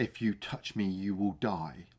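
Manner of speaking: soft, hushed, barely-there secretive half-whisper. Retelling a film scene, quoting what a character says: imitating a half-whisper. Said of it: "the way that Paul also whispers".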